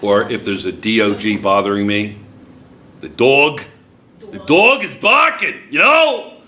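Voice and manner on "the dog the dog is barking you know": put-on, animated, high-pitched New Jersey accent. Demonstrating how words sound in a regional accent, New Jersey accent. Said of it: "I say it with a New Jersey accent".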